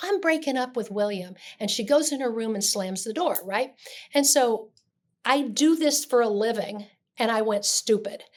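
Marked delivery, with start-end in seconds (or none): none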